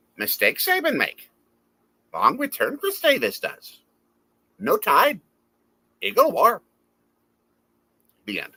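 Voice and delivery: very bad, very high sing-song voice swooping around. Answering a fan's haiku challenge, doing a very bad Yoda impersonation. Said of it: "I'll do a very bad Yoda impersonation".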